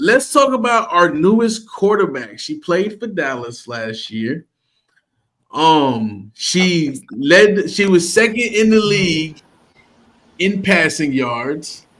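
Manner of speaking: slow, deliberately dragged words, drawn-out um. Introducing the team's newest quarterback while stalling for someone to say her name: speaking slowly. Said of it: "Y'all see how I'm talking slow".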